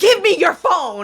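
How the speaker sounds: play-acted angry scream, held back, mild. Retelling how a woman screamed a demand at them, retelling a scream. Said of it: "she screamed at me".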